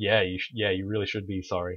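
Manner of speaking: ordinary delivery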